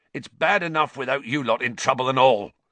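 said fiercely. Hagrid urges Harry, Ron and Hermione to go before the voices arrive; fierce. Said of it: "said Hagrid fiercely".

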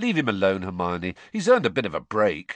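ordinary delivery

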